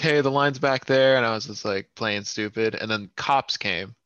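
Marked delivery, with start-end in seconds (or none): 0.0-1.2 high, loud, yelled callout. Retelling how people in the line yelled at the speaker: imitating people yelling. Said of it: "yelling, like".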